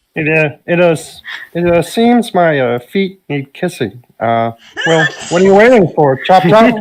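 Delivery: high frog-puppet character voice. Trying out voices with others, offering a line for Kermit; Kermit the Frog voice. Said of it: "perfect line for the Kermit voice".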